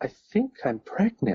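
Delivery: hushed, secretive, murmured stage whisper. Retelling a phone call made from a desk at the office: imitating a whisper.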